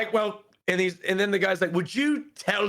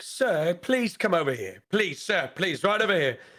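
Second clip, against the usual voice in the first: put-on British accent, polite calling tone. Retelling a diner calling someone over: put-on british accent. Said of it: "saying that in the British accent".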